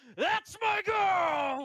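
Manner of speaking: raucous, shrill, very high, very loud scream. Narrator voices a rowdy man in the stands across the way; rowdy man screaming. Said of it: "a very rowdy man from the stands across the way screaming".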